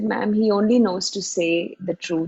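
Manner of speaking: ordinary delivery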